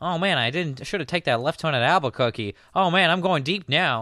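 high cartoon-character voice. Retelling a cartoon-voiced football film narration: Bugs Bunny voice. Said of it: "So you have Bugs Bunny, he's like".

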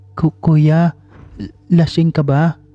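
very high, halting, stammering voice. Narrator reads a character asking a man who came in smelling of alcohol, stammering. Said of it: "Nauutal na tanong ni Galvina".

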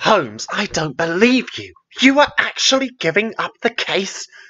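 hissed disbelief. The narrator, following his companion out the door: hissed in shock. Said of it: "I hissed in shock".

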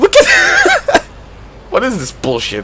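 very high, laughing squeal of disbelief.

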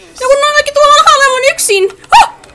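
long, high, loud screams. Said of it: "[name], älä huuda".

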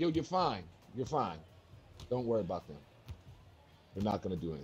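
ordinary talk

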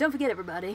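put-on radio DJ announcer delivery. Pretending to be a radio dj talking to listeners: put-on radio dj voice. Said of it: "if I was a, a radio D J. I'd be like".

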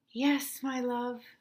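soft, sighing delivery on an exhale. Narrator reading the mother's bedtime reply to her child: sighing. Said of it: "sighed Mama".

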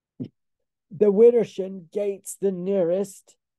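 loud, high, bellowing shout. A man shouts to his companion above the crackle of collapsing rafters: shouting over noise. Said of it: "Rincewind shouted above the crackle of collapsing rafters".

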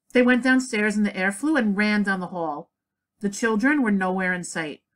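ordinary delivery

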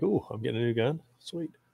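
mock thrilled, gleeful excited gush. Retelling own reaction to hearing about a review: imitating own past excitement. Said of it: "I was all excited".

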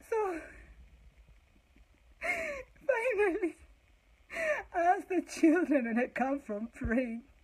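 words through hard laughter. Speaker tells a story and laughs at her own joke, laughing hard. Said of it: "I'm laughing so hard at my own joke".

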